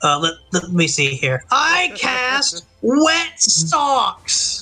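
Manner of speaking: loud resonant character voice. Game master voicing Alpha Chaticus as his face appears on the mirror, booming voice. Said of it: "his voice is just booming".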